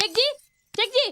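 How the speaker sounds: loud calling out. Calling out to Sheikh ji about someone outside, shouting. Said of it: "अबे क्यों चिल्ला रही है?".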